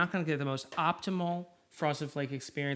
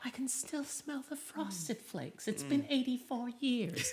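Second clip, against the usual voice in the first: put-on soft, high, elderly old woman voice; 6 semitones higher, 8 dB quieter than usual. Comparing herself to a film scene, the speaker does a Gloria Stuart in Titanic impression. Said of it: "I'm like Gloria Stewart in Titanic".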